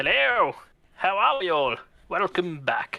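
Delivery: put-on drawn-out old man voice. Greeting everyone on coming back: old man voice. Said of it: "about forty years late. An old man".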